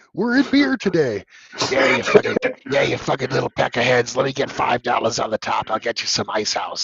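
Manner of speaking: put-on elderly man's character voice. Recalling getting Calvin to buy booze, the speaker performs Old Man Willie voice. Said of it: "it's Old Man Willie".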